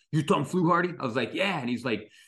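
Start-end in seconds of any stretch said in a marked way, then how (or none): 0.1-0.9 put-on rough, gruff New York accent. Speaker retells a studio caller phoning about his samples, gruff new york accent. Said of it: "this gruff New Yorker was like".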